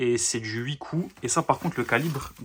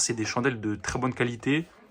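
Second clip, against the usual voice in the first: usual speaking voice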